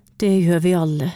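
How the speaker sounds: spoken through a sigh. A mother answers her child, who misses their lost dog: sighing. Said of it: "sukket mamma".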